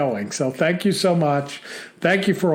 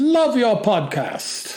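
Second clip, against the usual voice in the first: bad German accent drifting British, pitched up; 5 semitones higher than usual. Reading a listener's letter from germany on the podcast, in a bad german accent. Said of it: "I can't even do a German accent tonight".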